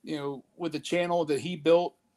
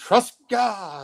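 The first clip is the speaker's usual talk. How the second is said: loud southern preacher's delivery; 4 semitones higher, 5 dB louder than usual. Answering a viewer's request to hear his preacher's voice, down-south preacher's voice. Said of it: "that was my my my down south, you know, preacher's voice".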